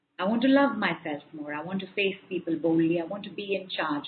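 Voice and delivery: ordinary talk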